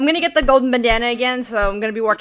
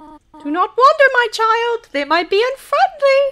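motherly voice, pitched way up; 11 semitones higher, 3 dB louder than usual. Playing a game, voicing the mother goat warning her child, Goat Mom voice. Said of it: "Goat Mom".

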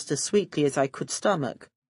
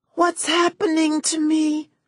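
high, rasping, from the throat, very high; 10 semitones higher than usual. Narrator reading a character's question in a story: throaty rasp. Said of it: "She asked in a throaty rasp".

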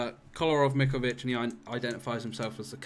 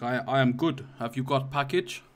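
bad, fake put-on Russian accent attempt; 3 dB louder than usual. Imitating someone who calls himself the captain, bad put-on Russian accent. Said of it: "I can't do Russian accent. It's like".

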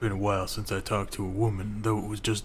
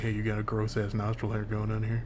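ordinary talk

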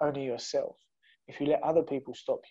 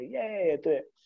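mocking, sarcastic, pitched-up tone; 6 semitones higher than usual. Retelling how a group at a party answered him: imitating a sarcastic reply.

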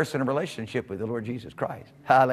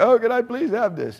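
high, loud mock pleading through a laugh. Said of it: "they're standing there looking at you".

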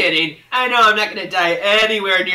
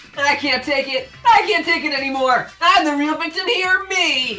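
distressed, put-upon, upset, high-pitched voice; 7 semitones higher than usual. Complaining in character about being the real victim, upset. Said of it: "Why are you getting upset?".

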